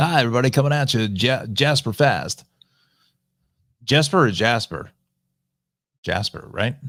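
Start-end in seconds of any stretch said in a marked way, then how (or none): 0.0-2.4 on-air radio DJ station announcer voice. Joking that a player's name sounds like a DJ's, doing a radio DJ voice. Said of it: "That sounds like a D J radio name".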